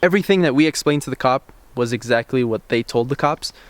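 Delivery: plain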